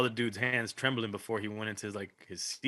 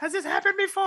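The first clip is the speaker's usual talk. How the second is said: mock screaming woman's cry, very high-pitched; 4 dB louder than usual. Retelling what a lady said in the middle of chaos; imitating a lady screaming. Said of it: "the lady's screaming like".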